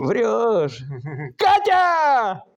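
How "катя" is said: high-pitched, loud shout. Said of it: "Некоторые боятся крикнуть даже".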